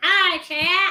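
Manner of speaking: said with vigor. Greeting the chat after being asked to say hi: said with vigor. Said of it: "Why do you say that with, with such vigor?".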